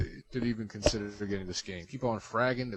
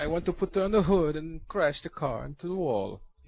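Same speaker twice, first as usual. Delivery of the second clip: bad put-on Kazakh accent, higher pitch; 6 semitones higher than usual. Doing an impression the others laugh at: very poor Borat impersonation. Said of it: "a very poor impersonation of Borat".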